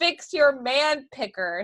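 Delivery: put-on Texan accent. Saying a book title aloud for fun: Texan accent. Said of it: "I wanna say it in a, in a Texan way".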